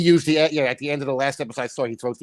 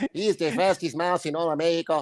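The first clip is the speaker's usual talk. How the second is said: higher cartoon mouse voice with Mexican accent; 4 semitones higher, 4 dB quieter than usual. Joking that the other speaker sounded like a cartoon mouse: Speedy Gonzales voice. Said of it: "mice from the Speedy Gonzalez cartoon".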